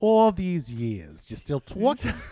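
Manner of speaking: loud, swooping, sing-song, put-on New York accent. Quoting how she greets them, in her fake new york accent. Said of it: "puts on her fake New York accent".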